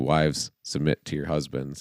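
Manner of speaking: ordinary talk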